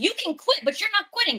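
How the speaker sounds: very high-pitched, shrill yelling outburst. Retelling an argument with the public defender: retelling yelling at someone. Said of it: "I started yelling at her".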